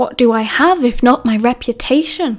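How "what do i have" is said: plain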